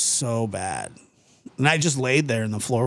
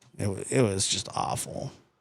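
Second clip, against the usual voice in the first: ordinary talk, nothing marked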